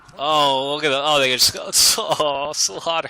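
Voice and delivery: slow speech broken up by laughter. Commentator casting a game as units get wiped out; laughing while talking. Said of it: "sorry if I'm laughing".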